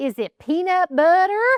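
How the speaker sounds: put-on cute, high-pitched little-kid West Virginia accent. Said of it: "he would say".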